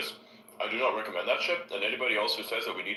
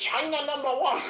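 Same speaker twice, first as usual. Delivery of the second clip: very high, sarcastic, mocking fake Chinese accent; 4 dB louder than usual. Recounting what people pumping Bitcoin used to say, sarcastic put-on Chinese accent. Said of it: "in the sarcastic China voice".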